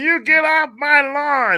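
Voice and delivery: high, slow, mock old-man screaming yell.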